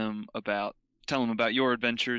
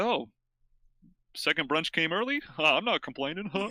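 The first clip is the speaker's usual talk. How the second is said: mumbled, tossed-off aside, pitched up; 7 semitones higher than usual. Describing a feast scene as knights gather around, voicing the muttering knights. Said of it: "you hear people muttering like".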